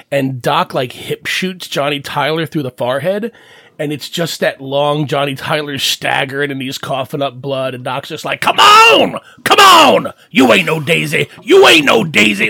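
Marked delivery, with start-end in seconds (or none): 8.4-12.5 very loud, raw, rough, swooping yell. Retelling a movie gunfight scene, acting out Doc yelling at his wounded opponent. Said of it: "like yelling at him the whole time".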